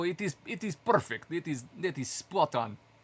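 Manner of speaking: fake, laid-on-thick Russian accent. Quoting russian viewers on the stream, in a put-on russian accent. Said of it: "The Russians really like when I do my Russian accent".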